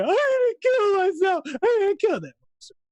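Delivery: put-on high, loud, unhinged ranting.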